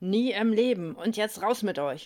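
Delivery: cursing, swearing outburst. McCraig, just handed a list by Jonathan, answers cursing. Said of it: "McCraig fluchte".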